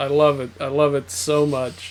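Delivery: sarcastic fake joy. Saying they love being banished to the realms of capitalism: sarcastic fake joy. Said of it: "You can hear the joy in my voice".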